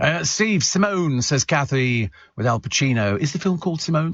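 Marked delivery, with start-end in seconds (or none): 3.2-4.1 small, timid little voice, pitched up. Reading out answers about a film's title, the speaker voices Rachel's guess in a timid little voice. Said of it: "in a timid little voice".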